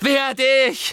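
screaming at a very high, shrill pitch. After Snape deflects his curse, Harry shouts back at him: shouting. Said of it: "schrie Harry ihn an".

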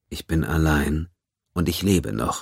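plain reading voice

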